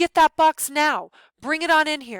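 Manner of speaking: loud, high, commanding, take-charge tone. Narrating a story, voicing the brother Paul giving an order, in his take-charge voice. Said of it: "Paul says in his take charge voice".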